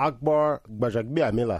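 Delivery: imitated Nigerian accent. Asked which accent to say it in, the speaker picks a Nigerian accent. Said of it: "I like the Nigerian accent".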